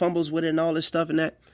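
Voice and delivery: very fast rush, words tumbling over each other.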